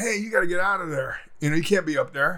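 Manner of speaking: plain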